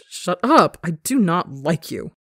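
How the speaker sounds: loud, exaggeratedly snooty, haughty drawl. Reading a story aloud, a character denies liking his teasing partner: overly haughty. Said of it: "Ranbu stresses, overly haughty".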